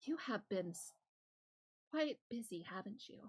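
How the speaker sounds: soft, hushed whispering voice. Voicing a voice that a player's character hears in their mind: whispering voice in the mind. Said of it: "hear a voice whispering in your mind".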